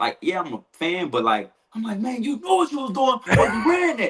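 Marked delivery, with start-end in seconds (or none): 2.0-4.1 put-on screaming, higher. Showing how they scream when their team messes up a pass: imitating own screaming. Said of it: "I'ma be screaming like".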